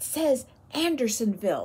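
whispering. Reading a story aloud, a prisoner reads the stockade gate: whispered. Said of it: "Pink whispered".

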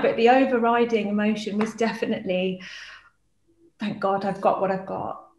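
tearful voice, crying through the words. Talking about loss and about children, crying while speaking. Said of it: "I know I'm crying now".

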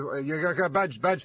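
ordinary talk

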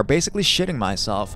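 plain

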